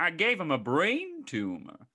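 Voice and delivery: very slow, stretched-out, high sing-song delivery. Copying the other speaker's impression of a movie line: impression of a Maya Rudolph impression. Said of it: "my impression of your Maya Rudolph impression".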